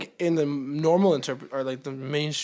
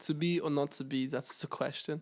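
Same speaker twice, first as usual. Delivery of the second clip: Danish accent leaning toward a German sound; 8 dB quieter than usual. Showing friends how the line would sound, in a German-sounding accent. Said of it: "Like very like almost German sounding".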